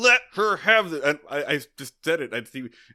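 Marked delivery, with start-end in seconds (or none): 0.0-1.1 all-out, loud screaming outburst. Speaker recounts what they screamed at the time, retelling own screaming. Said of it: "I'm just screaming".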